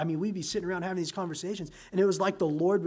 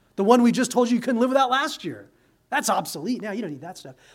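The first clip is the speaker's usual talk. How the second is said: ordinary talk, nothing marked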